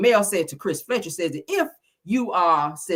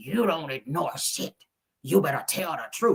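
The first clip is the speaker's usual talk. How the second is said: aggressive, deep put-on voice, quieter; 3 semitones lower, 5 dB quieter than usual. Retelling what a cast member told Chris: imitating Nell, aggressive and deep-voiced. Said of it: "she's kinda aggressive when she said".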